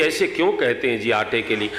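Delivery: plain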